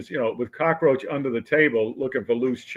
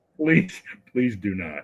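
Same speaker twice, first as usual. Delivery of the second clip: mock-pleading tone, lower pitch; 4 semitones lower than usual. Retelling how a superior officer reacted to a jab, imitating someone pleading. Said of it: "and he's like".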